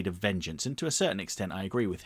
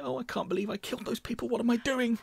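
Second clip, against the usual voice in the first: very high, lighter, worried voice. Demonstrating the softer personality's voice, imitating Two-Face's worried voice. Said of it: "slightly lighter, more worried voice".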